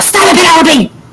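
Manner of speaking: high-pitched yelling. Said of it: "I yell".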